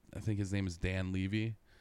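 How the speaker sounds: normal talking voice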